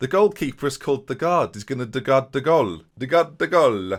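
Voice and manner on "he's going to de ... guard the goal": put-on Spanish accent, "the" said as "de". Describing a Danish goalkeeper's job, in a put-on Spanish accent. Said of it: "I do it in a Spanish accent for no reason at all".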